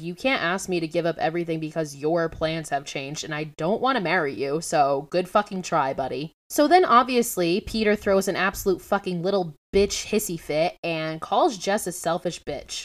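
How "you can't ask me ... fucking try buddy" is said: plain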